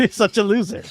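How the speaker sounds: disparaging put-down tone. Retelling what the wife said on seeing the figures: imitating wife's tone. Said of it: "the tone of the voice".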